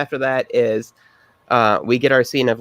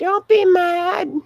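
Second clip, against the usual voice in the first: put-on very high, childlike little kid voice. Retelling a line from a creepy scene: little kid voice. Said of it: "little kid voice".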